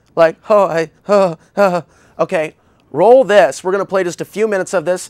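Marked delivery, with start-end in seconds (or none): 0.5-1.8 beaten down, defeated, very slow and broken. Imitating how a woman in the video sounded: imitating a defeated voice. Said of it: "how it sounded so defeated".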